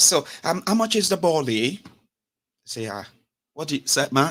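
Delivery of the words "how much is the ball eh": fake London accent, much higher. Mocking Nigerians back from a two-week London holiday: mock London accent. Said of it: "they don't get accent".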